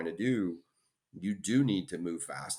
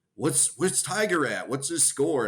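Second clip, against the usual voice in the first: mock yelling, much higher pitch; 8 semitones higher, 6 dB louder than usual. Retelling a drunk fan yelling over the fence; retelling a fan's yelling. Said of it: "he's yelling over the fence".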